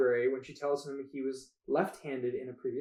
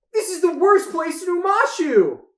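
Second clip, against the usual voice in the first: very loud, high, drawn-out cartoon voice; 11 dB louder than usual. Trying out voices, the speaker delivers a line sounding like Sokka. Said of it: "You sound like Sokka".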